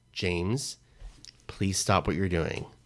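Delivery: put-on polite, pleading tone. Speaker retelling how they would ask James to stop, imitating a polite request. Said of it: "in a polite way".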